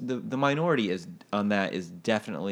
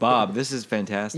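usual speaking voice

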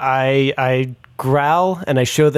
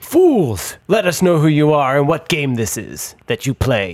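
bad, clumsy put-on half-orc voice and accent. A player speaks as his half-orc to strangers, in a terrible half-orc accent like Darth Vader. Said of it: "I'm a half-orc. ... that's a terrible accent. ... I sound like Darth Vader there".

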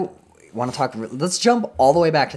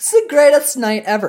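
put-on heavy Valley Girl accent, high, loud, gushing; 13 semitones higher, 6 dB louder than usual. Quoting a group of girls at a bachelorette party, heavy valley girl accent. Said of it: "very heavy Valley Girl accents".

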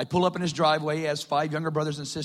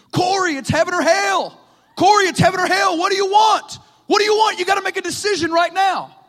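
shrieking at full blast, very high pitched; 11 dB louder than usual. Retelling how a man sprinted out of his house toward the speaker, imitate his screaming. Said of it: "he's screaming".

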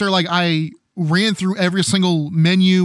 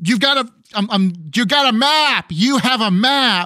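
mock, acted-out yelling; 3 semitones higher than usual. Recalling watching a friend play Mass Effect: retelling own yelling. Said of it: "I'm yelling".

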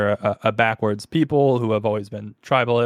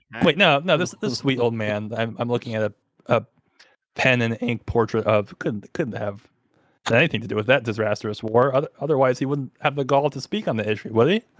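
plain

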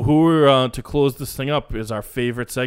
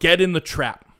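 put-on loud yell, higher pitch; 5 semitones higher than usual. Retelling what a golf fan in the crowd yelled: imitating a heckler's yell. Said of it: "he yells out".

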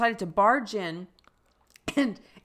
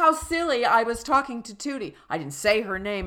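ordinary delivery

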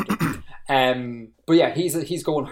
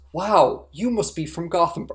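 mock earnest, serious tone, higher; 5 semitones higher than usual. Acting out a bar patron in an imagined scene: imitating someone speaking in all seriousness. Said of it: "someone in all seriousness goes".

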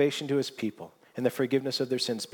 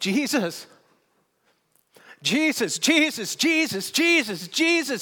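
acted-out shout, much higher and slower; 12 semitones higher, 5 dB louder than usual. Speaker retells a man on a stage breaking a long silence; retelling a shout. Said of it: "all he does is he just shouts".

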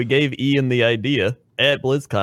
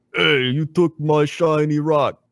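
put-on ogre voice; 3 semitones higher than usual. Improvising a World of Warcraft bit, one player voices one head, Krendor: ogre voice. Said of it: "do your ogre voice".

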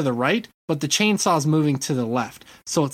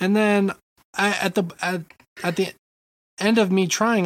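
normal talking voice

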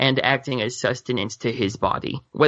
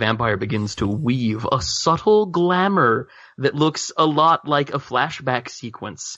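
ordinary talk

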